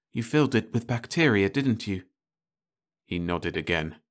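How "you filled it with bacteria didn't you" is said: whispered, higher pitch. A woman questioning a man who brought a bottle from the ship, whispered. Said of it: "she whispered".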